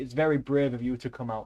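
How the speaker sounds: plain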